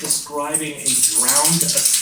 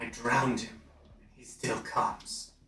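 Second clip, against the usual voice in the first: hissing creature voice, lower and quieter; 3 semitones lower, 9 dB quieter than usual. Narrating a game scene, the speaker voices a cornered creature answering a player; hissing creature voice. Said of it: "it kind of hisses".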